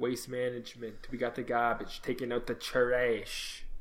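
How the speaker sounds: soft, very bad put-on Brooklyn mobster accent. Joking that the Waste Management Open sounds mafia, in a bad Brooklyn mafia accent. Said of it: "It's the worst Italian accent".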